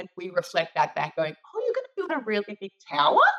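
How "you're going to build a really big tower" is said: rising pitch at the end of tower. Reflecting Kelly's statement back as a question: rising pitch on tower. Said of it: "our voice goes up at the end ... the question mark is put in there because I've gone tower".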